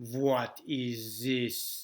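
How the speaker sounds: Russian-accented English, th pronounced as z. Demonstrating how different languages sound, doing a russian accent. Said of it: "I could say in Russia".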